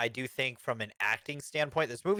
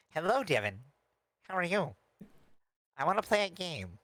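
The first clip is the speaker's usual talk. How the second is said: high-pitched puppet character voice; 4 semitones higher than usual. Imagining what a puppet character would say, speak in a higher-pitched Muppet-like voice. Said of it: "it'll have like a higher pitched voice".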